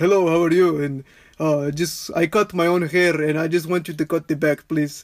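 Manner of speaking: put-on Eastern European accent. Recalling a regular client who cut his own hair, in an Eastern European accent. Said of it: "He had to have be been like eastern european ... talked like this".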